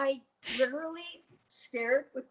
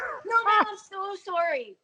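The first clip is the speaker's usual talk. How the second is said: put-on very slow, drawn-out, raised drunken voice; 9 semitones higher, 7 dB louder than usual. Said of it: "and he was drunk".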